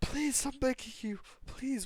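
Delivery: put-on crying, desperate tearful pleading, very high pitch. Retelling a scene where Minora, being beaten, begs while crying, imitating Minora crying. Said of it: "while he's crying like that".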